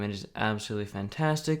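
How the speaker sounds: ordinary talk, nothing marked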